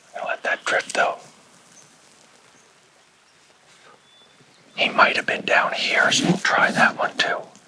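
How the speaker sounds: hushed, quiet whisper. Angler narrating while fishing an undercut bank for trout, whispering. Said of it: "I don't know why I'm whispering".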